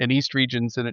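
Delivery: normal talking voice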